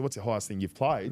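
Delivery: normal talking voice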